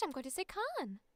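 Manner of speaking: "can" with British pronunciation. Showing how the word sounds in a british accent. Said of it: "if I'm going to say it in British".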